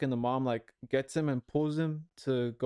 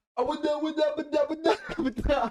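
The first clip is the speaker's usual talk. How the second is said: mock gibberish, screamed very high and shrill; 13 semitones higher, 4 dB louder than usual. Recreating the scream a man did in a drive-through, imitating a man's scream. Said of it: "I'm gonna try and replicate the scream".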